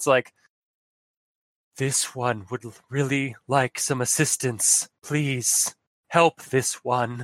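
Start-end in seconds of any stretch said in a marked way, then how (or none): 1.8-7.3 soft, softly whispered voice. Voicing a small creature cowering behind debris: soft whisper. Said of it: "a soft whisper".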